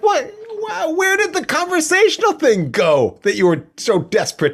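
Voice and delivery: high, loud outburst of shocked disbelief.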